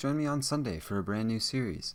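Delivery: ordinary delivery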